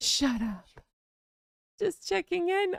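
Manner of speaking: fake modest voice. Retelling a woman's video line in a faux humble voice. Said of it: "I'm putting on my faux humble voice".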